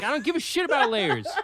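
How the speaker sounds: exasperated delivery.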